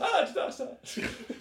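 put-on hammed-up Irish accent, very high and slow. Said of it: "they go Irish it up a bit".

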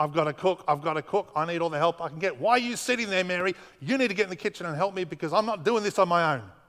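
acted, mock frantic, mad panic. Retelling the story of a sister cooking for Jesus, imitating frantic panic. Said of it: "she's gone into this mad panic and starts going".

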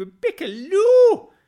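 very high, very loud exaggerated belting, final word stretched out. Recalling how a podcast co-host said a name, in exaggerated Ray Hudson accent. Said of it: "as if Ray Hudson was saying it".

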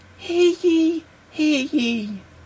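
feeble, pitiful, very soft, very high town crier call. Demonstrating the World's Worst Town Crier bit: soft, pathetic town crier. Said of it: "in a very soft and pathetic voice".

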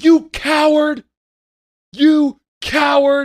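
enraged screaming, very loud, high and shrill. A driver recounts confronting a man who almost ran them off the road: reenacting a furious shout. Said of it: "I was furious".

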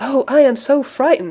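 breathless, high, panting gasp. A young lady caught at the door by a waiting man, panting. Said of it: "I panted".

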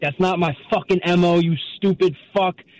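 high, furious, angry cursing outburst. Retelling how a basketball player shot up and yelled at him: imitating someone yelling. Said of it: "he started yelling at me".

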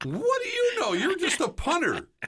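very high, squeaky, mocking voice. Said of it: "in that squeaky voice just goes".

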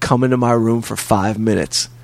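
ordinary delivery

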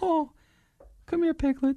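squeaked out, very high pitch. Joking about Winnie the Pooh, showing how a character talked: Mickey Mouse voice. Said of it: "Don't do Mickey Mouse".

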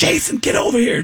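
mock high-pitched calling-out scream. Retelling calling a friend from the next room, retelling a scream. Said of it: "screaming to my friend Jason".

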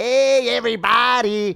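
loud, high, over-the-top exaggerated Mexican accent. Talking about how mexican comics sound, mimicking them: exaggerated mexican accent. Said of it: "That's what all Mexicans sound".

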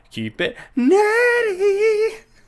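awful, goofy, very high, swooping voice. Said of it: "Why do we always sound so awful?".

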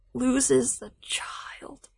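soft, slow, mock tragic whisper.

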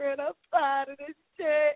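put-on crying voice. Retelling past words said to fred: imitating own crying. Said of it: "Every time I go, I'm crying".

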